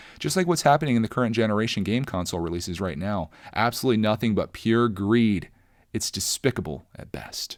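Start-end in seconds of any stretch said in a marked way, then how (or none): none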